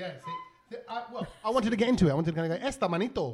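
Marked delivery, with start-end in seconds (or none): 2.7-3.3 surname said with Spanish pronunciation. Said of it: "you just did the Spanish accent when you said my surname".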